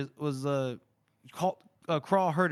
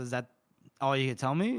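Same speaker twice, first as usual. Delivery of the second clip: ordinary talk, nothing marked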